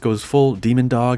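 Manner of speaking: ordinary talk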